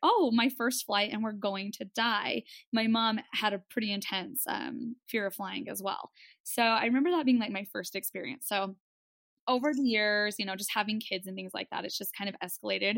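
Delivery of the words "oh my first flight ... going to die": put-on sobbing. Retelling own panic during turbulence on a first flight: mock bawling. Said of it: "bawling right there".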